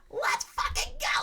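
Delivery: put-on teenage voice breaking and cracking. Retelling a sixteen-year-old kid picked from the crowd again, imitating a cracking voice. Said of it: "Like voice cracking and everything".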